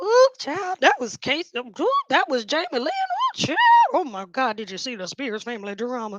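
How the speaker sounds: swooping, dishy, gossipy society voice. Imitating rich Louisiana elites gossiping at a game: imitating rich Louisiana elites gossiping. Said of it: "the elite and the rich in Louisiana be like".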